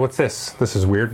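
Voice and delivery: ordinary talk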